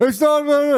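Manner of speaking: very high, loud shouted yell. Retelling how security staff talk to travellers: imitating someone yelling. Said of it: "you don't have to yell".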